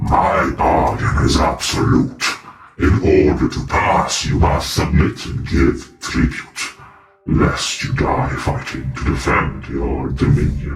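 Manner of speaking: low, echoing, many-layered, reverberating monster voice. A narrator voices a creature speaking through a door: reverberating creature voice. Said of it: "in that same reverberating voice".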